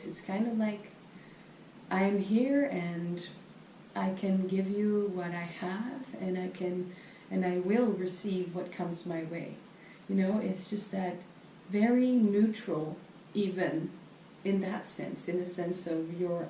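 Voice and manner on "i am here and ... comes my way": ordinary talk, nothing marked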